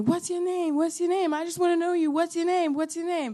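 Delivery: high-pitched, insistent, pestering, repeated screaming. Retelling how a man on the street kept screaming a question: imitating someone screaming. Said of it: "he kept screaming at me".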